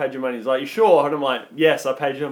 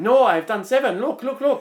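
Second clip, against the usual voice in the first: poor put-on Vietnamese accent, pitched up; 9 semitones higher than usual. Retelling an argument over signing a man's book, quoting him in a bad Vietnamese accent. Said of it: "I'm trying to do the accent".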